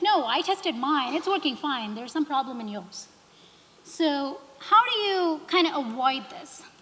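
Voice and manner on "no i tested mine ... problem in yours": ordinary talk, nothing marked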